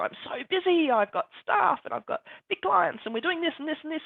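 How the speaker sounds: boastful, proud, high, rattled off quickly.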